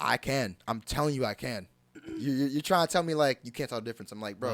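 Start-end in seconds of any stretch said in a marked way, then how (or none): none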